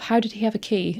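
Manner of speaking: ordinary talk, nothing marked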